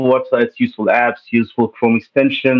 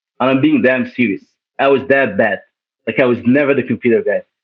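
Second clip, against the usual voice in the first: plain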